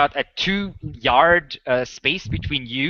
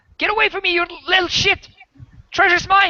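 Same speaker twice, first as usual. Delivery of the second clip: shrill, high, furious angry shouting. Voicing a cornered thief who wants the treasure: shouting thief. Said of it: "Keller, the thief, was like".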